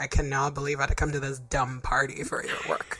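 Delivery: fake fed-up, irritated grumbling. Imitating George Clooney's wife at an award show: mock annoyed. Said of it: "She's just like".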